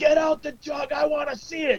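put-on very high screaming. Retelling screaming at the Michigan players during the game: imitating own screaming. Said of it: "I was screaming at the Michigan players".

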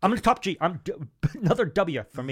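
slow, deliberate, drawn-out, unhurried delivery. Doing an impression that the other speaker calls worryingly good: Andrew Tate impression. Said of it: "this is how I describe that impression".

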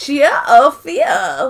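squeaky, helium-like, high-pitched put-on German accent. Describing a troll-like character, the speaker imitates his high-pitched german voice. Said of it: "In this high-pitched German voice".

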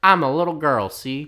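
fake fifties transatlantic Southern accent. Retelling a story about a girl who got on the team, in a 50s transatlantic southern accent. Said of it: "why are we giving her that accent?".

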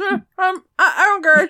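loud, high, muffled grunt, mouth stuffed full. Retelling how Dave answered an offer of help while chewing a power bar: imitating Dave grunting, mouth full. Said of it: "He is chewing his mouth full of power bar".

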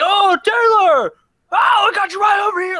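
very high, shrill, loud, drawn-out scream. Retelling how an old classmate called out across a food court: imitating someone screaming. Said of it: "screaming in the middle of this food court".

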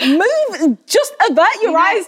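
worked up. Complaining about being told not to tempt others: agitated. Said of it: "sorry, I get really agitated".

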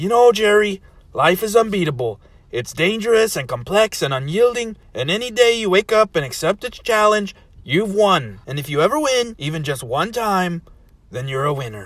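sweet, earnest, encouraging tone. Narrator voicing Rick answering Jerry, who calls himself a loser: Rick voice. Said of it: "Aw, [name], can we stop referring to me and things related to me as Doofus? It's not very nice, you know".

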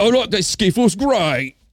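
poor put-on British accent. Explaining skiffle music, the speaker acts it out in a bad British accent. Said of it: "Sorry for that horrible accent".

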